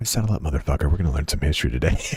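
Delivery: smooth, sweet-sounding voice. Introducing the games to newcomers, the speaker demonstrates in dulcet tones. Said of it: "Imagine my dulcet tones be like".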